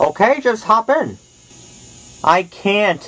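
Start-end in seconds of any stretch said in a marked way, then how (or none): 2.2-3.1 with a groan. A character, held back by a shield, refuses to hop in; groaning. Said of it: "groaned Jeff".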